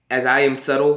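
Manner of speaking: plain reading voice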